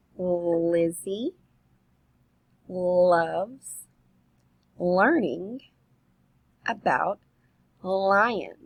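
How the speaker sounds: careful, slow reading with breaks inside phrases. A teacher reads a rhyme aloud to children listening for sounds: slow deliberate reading. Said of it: "I'm going to read it slow".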